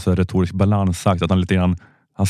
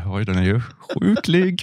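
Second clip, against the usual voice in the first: high, put-on, timid, conflict-averse voice. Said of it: "Jag bara säger".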